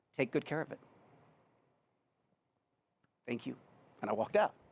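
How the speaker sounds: tearing up, choked voice. Retelling leaving the group in the conference room, tearing up. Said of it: "I'm gonna tear up right now".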